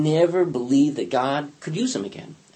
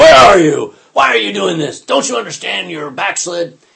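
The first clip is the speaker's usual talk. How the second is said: very loud, booming, rough scolding bellow; 4 semitones higher, 9 dB louder than usual. The speaker imagines God scolding the prophet Elijah, bellowing. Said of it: "didn't bellow at him and say".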